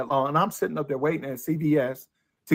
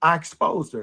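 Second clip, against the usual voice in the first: usual speaking voice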